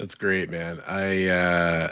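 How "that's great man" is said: dry mocking tone, lower and quieter. Responding to a story about a comic shop owner: sarcastic. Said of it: "I mean that in the most sarcastic way possible".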